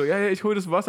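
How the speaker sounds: laughing through words. Retelling a woman's answer to a frightened man, retelling her laughing reply. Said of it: "sie lacht so richtig und sagt so".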